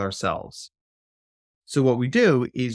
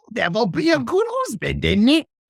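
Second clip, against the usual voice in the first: put-on high, helium-like little baby voice. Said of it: "a little baby voice like that".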